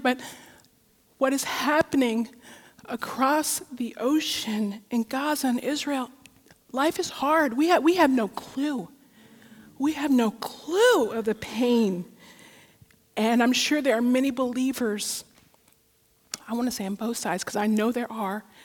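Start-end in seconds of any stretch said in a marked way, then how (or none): 0.0-12.0 slow voice on the edge of tears. Speaking to an audience about suffering, the speaker is close to crying. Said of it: "I don't know if I could say it without crying".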